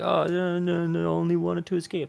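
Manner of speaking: put-on feeble, high, creaky, puny little voice. Describing how he comes in to answer, the speaker mimics his puny little voice. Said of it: "he comes in with his puny little voice and puny little delivery".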